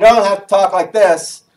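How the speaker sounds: loud projected voice. Giving phone call advice, showing the overdone way to talk, speaking loudly. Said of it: "That means speak loudly".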